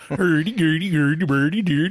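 Swedish-sounding nonsense babble. Hosts discuss how Nordic languages sound; mock Swedish gibberish of Magnus. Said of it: "That's what Magnus sounds like".

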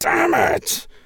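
very high, gravelly outcry. Reading a story aloud, a character cries from the back: crying out in a gravelly voice. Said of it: "cries a gravelly voice from the back".

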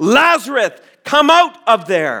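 mock furious, commanding, high-pitched roaring shout. A preacher retelling a call to lazarus to come out, retelling a roar. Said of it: "he roars".

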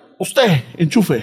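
put-on threatening, commanding tone. Retelling an order given to mom while setting up the tv: retelling own threatening order. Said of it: "threatening, bro".

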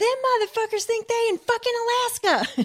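mock very high, shrill, nonstop screaming rant. Retelling a woman's rant on set, imitating a woman yelling. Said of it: "keeps yelling, keeps screaming this".

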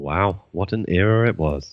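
dry sarcastic tone. Reacting to the end of a long era of reviews: sarcastic-sounding. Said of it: "That sounds so sarcastic".

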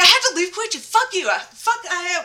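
furious, enraged, high-pitched, stumbling rant. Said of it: "she's so mad".

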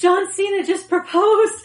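high, gasping blurt mid-hyperventilation. Speaker retelling breaking news to a man on the phone, retelling while hyperventilating. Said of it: "I'm like hyperventilating".

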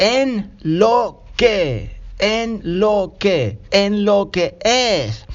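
very slow, careful, stretched-out repeated phrase.

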